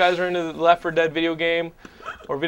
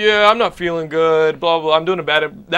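put-on zombie voice, louder and slower; 5 dB louder than usual. Retelling Ben getting off the phone after calling in sick, Ben as a zombie impersonation. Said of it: "doing a Ben as a zombie impersonation".

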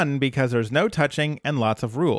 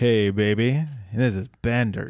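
put-on sultry voice, lower; 3 semitones lower than usual. Describing a scene, the speaker voices Bender's greeting: sultry Bender voice. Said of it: "It's very sultry".

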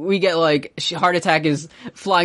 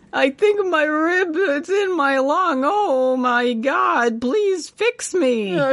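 fake, put-on crying and sobbing; 11 semitones higher than usual. Retelling a character's lines about his wounds, imitating someone crying. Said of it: "starts crying".

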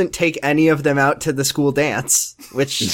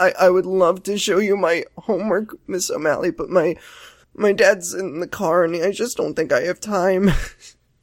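mock-sad, near-tears girl voice; 5 semitones higher than usual. Retelling how Ashley excused herself to Miss O'Malley, imitating Ashley sounding sad. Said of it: "She was making it sound so sad".

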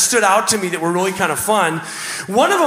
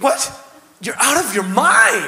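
swooping, zestful tone of disbelief. Coaching a reader on verse 15, showing how to say the line with gusto. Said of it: "say it with gusto".

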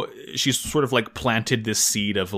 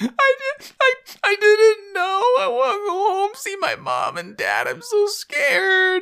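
put-on crying, much higher pitch. Recapping a scene where Rue bursts into tears before Glemmy, imitating Rue crying. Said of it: "Rue breaks into tears".

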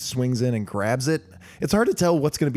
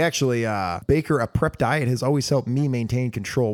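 normal talking voice

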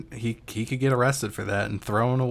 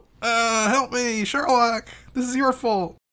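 put-on scream, much higher; 12 semitones higher than usual. Retelling a scene where a poisoned man screams to Sherlock, imitating someone screaming. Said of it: "as he was screaming and saying".

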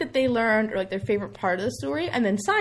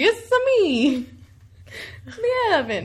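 high, put-on, exaggerated Italian accent; 7 semitones higher than usual. Describing a character who shows up in Italy, quoting him in a stereotypical Italian accent. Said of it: "he's got his stereotypical Italian accent".

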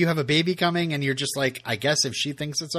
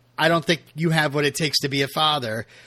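ordinary talk, nothing marked

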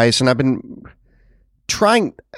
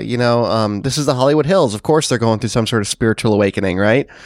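normal talking voice

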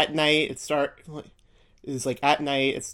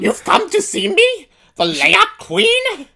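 shrill, very loud put-on old witch voice; 8 dB louder than usual. Imitating the witch from the show, a bit like a bad Yoda impression. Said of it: "talks a little bit like someone doing a bad Yoda impression".

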